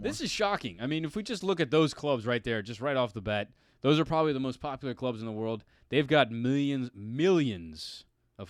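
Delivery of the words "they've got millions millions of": campy movie villain voice. Discussing the most popular clubs, the speaker slips into a Dr. Evil voice. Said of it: "I went into my Doctor Evil voice".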